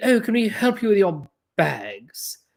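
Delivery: put-on very proper, formal British accent. Retelling a woman's anecdote, a bed-and-breakfast worker greets her, formal British accent. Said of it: "very, you know, formal sort of British accent".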